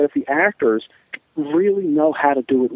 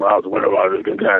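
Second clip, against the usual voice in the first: put-on mumble, much lower pitch; 7 semitones lower than usual. Recalling Robin Williams's take on Pacino as Richard III, mumbled Pacino impression. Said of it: "It was just mumbled".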